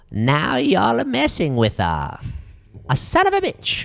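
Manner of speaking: fake put-on Italian accent, hard to place. Joking around with friends, saying a line in a racially ambiguous put-on accent.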